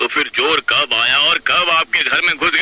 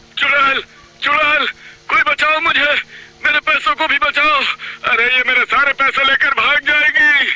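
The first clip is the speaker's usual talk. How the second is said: shrill, very high panicked cries; 10 semitones higher than usual. In a story, a narrator reads Mukesh's cry, shouting loudly. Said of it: "वो जोर से चिल्लाता है".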